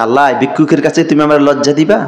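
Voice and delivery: ordinary talk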